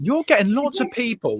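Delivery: very high, amazed, surprised disbelief. Host greeting a viewer, Kelly, sounding surprised. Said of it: "Why do I sound so surprised there?".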